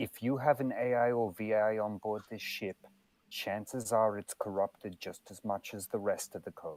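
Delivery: very quiet, hushed whisper. A player's character covers another character's mouth and speaks into her ear; whispering very quietly. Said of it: "whisper very quietly in her ear".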